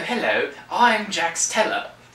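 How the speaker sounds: put-on very high British accent. Explaining that the show's lead actor is British, the speaker does British-accent Jax Teller. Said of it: "he is British".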